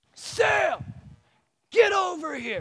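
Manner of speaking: very high, very slow, drawn-out yell. A pastor retells calling the dog sam back in a park, retelling a yell. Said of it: "I am yelling".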